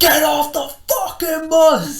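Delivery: loud, slow, high screaming.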